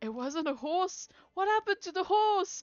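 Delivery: confused, panicked crowd, high and loud crying.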